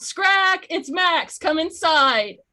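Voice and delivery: very loud, high, drawn-out yell. Calling an owlbear friend inside from the cabin door: yelling. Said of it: "and just yell".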